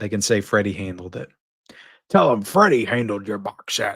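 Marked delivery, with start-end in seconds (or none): 2.1-4.0 gloating horror-movie killer voice. Joking about scratches on a box set: Freddy Krueger voice.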